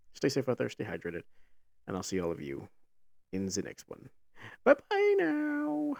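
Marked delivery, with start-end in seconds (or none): 4.7-6.0 very high voice breaking, then stretched out. Signing off a video to viewers, voice cracking. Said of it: "my voice cracked".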